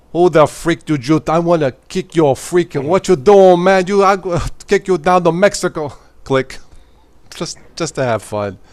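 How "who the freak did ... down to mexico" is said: very loud, high ranting in a put-on accent. Showing how a tech support scam caller would be answered: put-on accent. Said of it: "I'll go into my accent".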